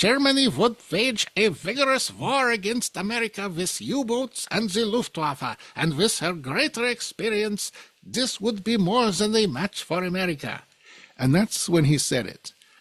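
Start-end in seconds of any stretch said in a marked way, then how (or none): 0.0-10.6 bad, laid-on German accent with raised pitch. Quoting Hitler's speech about war with America, in a bad German accent as Hitler. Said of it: "I'm going to use my bad German accent for this".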